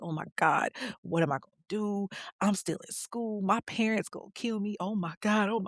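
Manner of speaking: play-acted frantic, panicked, spiralling, freaking-out outburst. Retelling a pregnant teen's panic: imitating someone freaking out. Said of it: "she's freaking out 'cause she's like".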